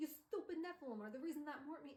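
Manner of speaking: bad, overdone New York accent. Recapping a story, voicing a pack of werewolves speaking to Will, bad New York accent. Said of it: "they have a bad New York accent".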